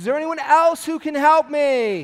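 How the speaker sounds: high, loud panicked voice.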